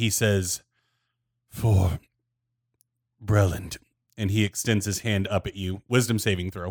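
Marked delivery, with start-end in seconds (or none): 1.5-3.8 very labored, strained, effortful voice. Voicing a wounded enemy who speaks up at a player: very labored voice. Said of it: "on his very labored voice".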